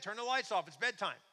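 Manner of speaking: loud shout.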